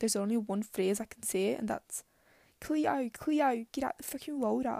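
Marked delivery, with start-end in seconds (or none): 2.6-4.8 clumsy, weak, badly put-on Australian accent. Speaker shows the one phrase they can say, in a bad Australian accent. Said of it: "all I can really say in the Australian accent".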